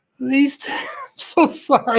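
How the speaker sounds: words broken up by hard laughing. Describing two people's slogan while laughing too hard: laughing while talking. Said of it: "I'm laughing too hard".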